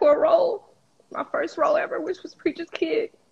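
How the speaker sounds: tearful speech. Speaker recounting hard times living in a hotel, crying while talking. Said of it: "I can't believe I'm crying".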